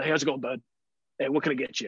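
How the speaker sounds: put-on macho bro voice. Retelling a sandwich shop worker's greeting: imitating a macho guy. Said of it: "got that full macho thing going on".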